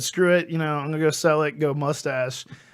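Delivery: ordinary delivery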